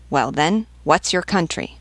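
usual speaking voice

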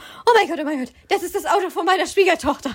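high, rushed mock panic, rattled off. Retelling how a woman reacted on seeing a runaway car, imitating someone panicking. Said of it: "sieht das Flippt fast aus".

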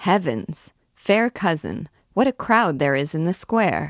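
ordinary delivery

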